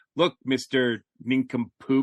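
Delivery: plain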